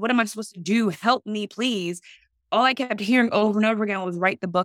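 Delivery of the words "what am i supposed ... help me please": desperate, pleading cry, begging. Speaker recalls praying to the Lord at rock bottom, retelling crying out, begging. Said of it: "like I'm crying out, I'm begging you".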